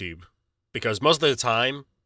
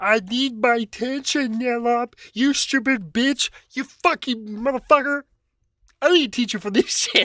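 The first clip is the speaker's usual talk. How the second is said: very high-pitched, abusive, insulting ranting outburst; 13 semitones higher than usual. Imitating what a lurker in chat would say: imitating Gams. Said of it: "he would come in the chat and be like".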